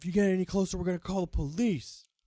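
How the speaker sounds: frightened, high-pitched, scared screaming yell. Retelling how a worried shy guy warned someone, imitating a scared scream. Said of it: "starts screaming and gets scared".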